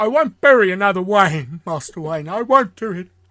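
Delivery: restrained emotion. Describing how he plays it in the Batman era: imitating held-back emotion. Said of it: "He gets very emotional, but the emotions have to keep down".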